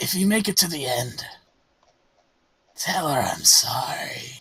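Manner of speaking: hoarse, rasping voice. Voicing a hooded figure with no flesh on his bones speaking, hoarse voice. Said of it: "he says in a hoarse voice".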